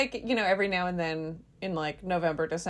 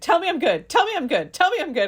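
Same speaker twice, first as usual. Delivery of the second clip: put-on insistent demanding voice, higher and louder; 9 semitones higher, 5 dB louder than usual. Retelling a TV therapy scene, imitating Dee insisting. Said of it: "insisting that the therapist tell her she's a good actress".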